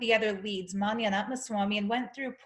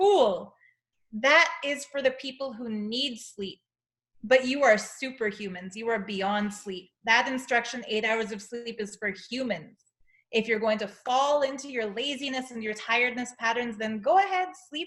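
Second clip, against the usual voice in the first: ordinary talk, nothing marked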